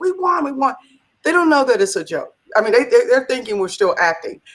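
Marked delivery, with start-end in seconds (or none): 0.0-0.7 put-on very high, screamed, triumphant shriek. Retelling the COO running through the office to the staff: imitating someone screaming. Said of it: "he's screaming to all the people".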